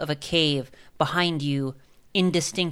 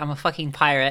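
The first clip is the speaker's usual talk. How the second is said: normal talking voice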